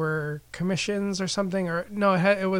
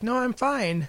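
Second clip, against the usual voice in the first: over-the-top bubbly, fake happy, pitched up; 5 semitones higher than usual. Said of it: "happy, bubbly, over the top".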